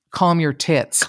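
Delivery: plain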